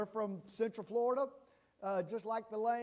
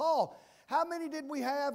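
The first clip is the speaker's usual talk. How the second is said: put-on, loud, high, screamed-out call; 5 semitones higher, 5 dB louder than usual. Retelling calling out a question during early worship, retelling screaming out. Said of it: "I screamed out like I always do".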